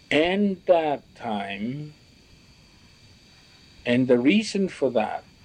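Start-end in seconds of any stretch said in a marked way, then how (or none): none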